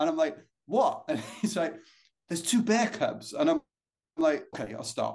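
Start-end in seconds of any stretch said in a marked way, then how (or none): 2.3-3.3 put-on American accent with raised pitch. Retelling what his companion said to him on the trail; put-on american accent. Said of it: "apologies on my American accent".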